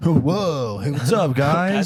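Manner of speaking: put-on surfer dude voice. Joking about a costume name, as Captain Zach: put-on surfer dude voice. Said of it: "I feel like that's like a surfer dude".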